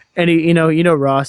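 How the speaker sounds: ordinary talk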